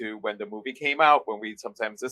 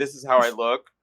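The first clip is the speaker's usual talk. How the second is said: normal talking voice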